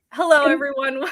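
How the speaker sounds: stifling laughter while speaking. Opening a live q and a after a joke, laughing while talking. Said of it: "but I'm laughing".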